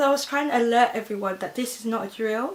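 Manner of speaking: ordinary delivery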